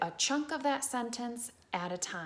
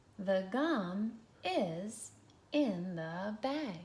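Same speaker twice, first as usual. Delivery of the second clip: smooth, fluent reading in phrased chunks. Showing learners how a sentence sounds read fluently: fluent phrased reading. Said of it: "Try it again with me".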